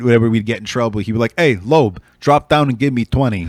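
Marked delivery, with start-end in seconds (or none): 1.4-3.5 put-on Jersey-accented voice. Retelling what he'd say whenever they got in trouble, in a put-on Jersey accent. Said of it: "he still had his Jersey accent".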